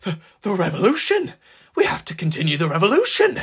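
timid stutter. Pinned to the ground by Maxine, a man answers her shouted question, stuttering timidly. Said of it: "He stuttered timidly".

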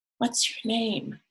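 whispered, high voice. Narrator reading a story, one girl speaks to another; whispered. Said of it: "Daisy whispered".

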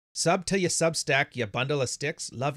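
put-on Australian accent. Reading a viewer's paid message aloud on stream, in an Australian accent. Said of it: "Am I doing the right accent?".

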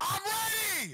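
squeaky, very high little voice. Asked by a friend if he's ready, he answers in a squeaky voice. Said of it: "That was so squeaky".

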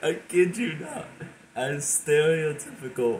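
exhausted voice, very high pitched and cracking. Telling a story about fearing a monster under the bed, the speaker's voice is cracking from tiredness. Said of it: "you hear my voice crack?".

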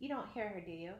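plain

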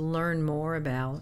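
normal talking voice

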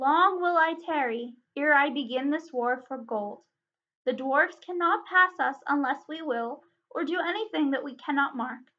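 ordinary talk

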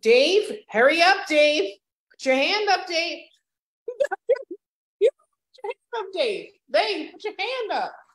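high, sing-song, playful teasing, cracking up. Speaker taking questions teases Dave about putting his hand up, teasing. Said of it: "I'm teasing Dave".

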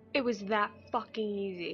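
frustrated, annoyed with oneself. Playing a game, frustrated at own mistake, mad at oneself. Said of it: "I'm so mad at myself".

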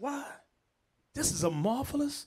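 put-on sarcastic tone. Voicing the healed man's reply to the leaders: acting out sarcastic tone. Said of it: "He's being sarcastic now".

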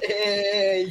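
short hey with a rising tune. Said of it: "You said".

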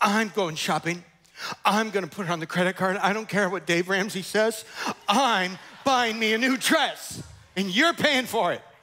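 furious, angry, ready-to-storm-off tone. Speaker retells a wife answering her just-woken husband; mock-angry wife. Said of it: "So she storms out".

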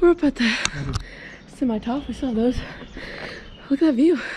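winded talk, puffing between the words. Climbing ever steeper ground with a companion and stopping to look around, out of breath. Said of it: "I'm out of breath. Still out of breath".

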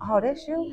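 high stunned outburst.

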